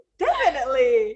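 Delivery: high, loud, laughing through the words.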